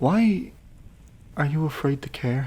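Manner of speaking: feeble, weak voice, slow and gentle. Red, freshly conscious and wounded, questions Kara from the bed: weakened voice. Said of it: "left in the snow with the woman herself absent. / a weakened voice called over from an old bed. / a freshly conscious [name] laying on her side and watching her with a gentle gaze".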